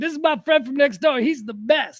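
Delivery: totally absurd, comedic delivery. Speaker describes a trailer, quoting one of its lines: Paul Rudd impression. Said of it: "that comedic tone of Paul Rudd".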